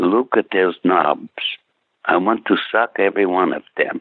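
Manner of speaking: quiet, low-volume voice. Retelling what a woman said while watching sound technicians work, imitating someone speaking quietly. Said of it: "she just said quietly".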